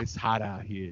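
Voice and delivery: low, soft, flirty come-on.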